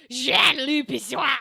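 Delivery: loud, gruff put-on French accent. Repeating own earlier line with a joke accent: gruff put-on French accent. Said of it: "I'm just like".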